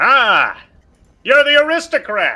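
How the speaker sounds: very loud, booming, drawn-out, swooping voice. Repeating the in-character greeting after being told to be quieter: very loud in-character line. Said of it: "You're very loud".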